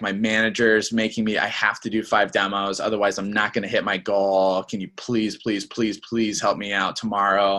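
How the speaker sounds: put-on wimpy, desperate pleading voice. Showing how not to guilt a prospect on the phone: imitating a wimpy, desperate plea. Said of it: "having a super wimpy voice".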